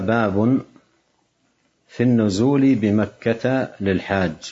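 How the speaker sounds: ordinary delivery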